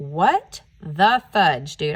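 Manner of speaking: acted, slow, really mad angry outburst. Telling how he found a giant hole, speaker re-enacts his own angry reaction. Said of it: "I was freaking so mad".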